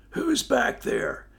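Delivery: breathless wheeze, very high and rough. A narrator voices the rider being caught on the climb, wheezing out the words. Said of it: "he wheezed out".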